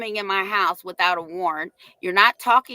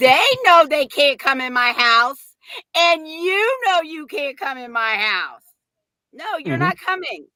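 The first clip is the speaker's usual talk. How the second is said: acted, pitched-up voice on the edge of laughter; 7 semitones higher than usual. Retelling own words to an official at the door, about to laugh. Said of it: "you hear my voice change 'cause I'm about to laugh at her".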